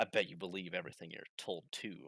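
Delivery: every word dripping with venom, venomous tone. Narrator reading a character's reply during a confrontation, with venom in his voice. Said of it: "says with venom in his voice".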